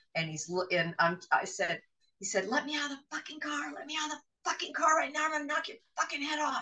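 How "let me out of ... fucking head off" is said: very high, shrieking, savage raging scream. Retelling a partner's threat in the car: imitating someone screaming in rage. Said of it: "he's purple-faced".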